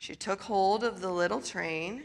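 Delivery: ordinary delivery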